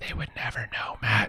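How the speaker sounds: very quiet hushed whisper, barely voiced. A quick aside to Matt during the intro, whispering. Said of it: "Sorry, I'm whispering".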